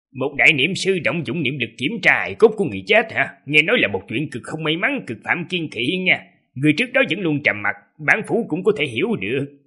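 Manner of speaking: calm, casual, scornful, mocking sneer. An official addresses the person before him, calm mocking sneer. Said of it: "thản nhiên cười nhạo rồi nói".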